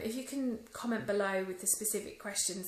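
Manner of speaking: plain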